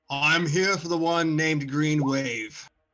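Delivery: big, loud, booming, erupting voice. A large figure halts his group and faces the players, large booming voice. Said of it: "This large, booming voice seems to erupt from him".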